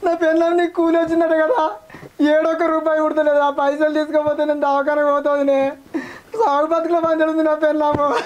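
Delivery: crying while pleading. Telling another person about troubles over wages and a hospital trip, crying while pleading. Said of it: "నువ్వెందుకు ఏడుస్తున్నావా?".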